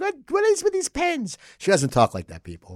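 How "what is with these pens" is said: shrill, very high-pitched, loud shouting. Retelling how his wife would yell at him about pens left on the desk, Joanne voice, yelling. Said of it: "That's just my Joanne voice".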